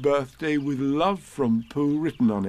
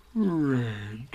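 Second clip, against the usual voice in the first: quiet murmur to oneself; 4 dB quieter than usual. After hearing the answer to his question, he murmured to himself. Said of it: "he murmured to himself".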